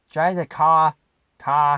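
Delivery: loud put-on Boston accent, "car" without its R. Trying out an accent on a sample phrase: Boston accent, dropped R's. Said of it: "I got a pretty good Boston accent, except when I have to say my R's".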